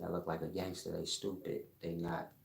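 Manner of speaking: normal talking voice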